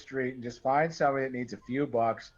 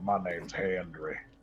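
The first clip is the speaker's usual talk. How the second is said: put-on southern drawl, lower and quieter; 7 semitones lower, 5 dB quieter than usual. Retelling meeting a plant contact on a Mississippi job: imitating Andre's southern drawl. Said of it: "the most southern fucking draw".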